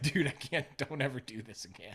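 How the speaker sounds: put-on playful tone. Retelling a reply to a caricature artist: imitating own playful tone. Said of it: "I said it like this".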